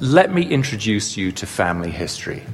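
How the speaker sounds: plain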